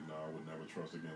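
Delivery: ordinary talk, nothing marked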